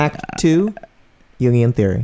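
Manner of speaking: announcing like a public-radio host. Mocking NPR-style podcasts, announcing an act, an Ira Glass impression. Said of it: "I was doing Ira Glass".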